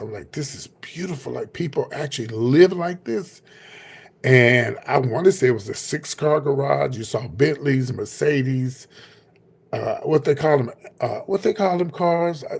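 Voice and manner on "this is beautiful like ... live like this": tearful, overcome, talking through tears. Retelling driving up to a mansion in tears: imitating own tearful words. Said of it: "I was just, like, in tears".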